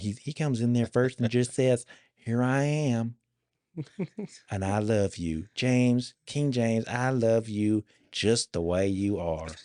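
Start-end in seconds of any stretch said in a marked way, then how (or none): 2.2-9.5 slow, gentle, put-on Southern drawl. Speaker acts out what he says on coming in, Southern accent. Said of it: "It's all Southern".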